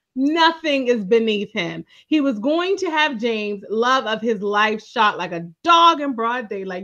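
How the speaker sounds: usual speaking voice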